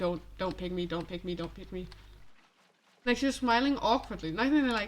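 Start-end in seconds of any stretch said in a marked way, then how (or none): 0.0-1.9 imploring, begging, repeated pleading tone. Imitating a classmate who silently begs the teacher: imitating a classmate pleading.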